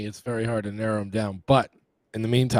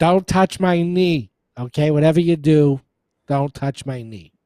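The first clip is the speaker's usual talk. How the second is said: put-on Boston accent, higher and louder; 5 semitones higher, 4 dB louder than usual. Imitating the other speaker as an old grandfather: Boston accent. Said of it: "Why would I all of a sudden have a Boston accent?".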